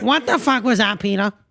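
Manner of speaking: demanding, angry cartoon woman voice. Retelling a Family Guy scene after they get saved, do a Lois impression from Family Guy. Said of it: "That was a great impression".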